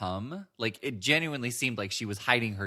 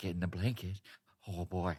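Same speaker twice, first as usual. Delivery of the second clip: creepy put-on voice, lower and quieter; 3 semitones lower, 6 dB quieter than usual. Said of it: "that makes it sound a lot creepier".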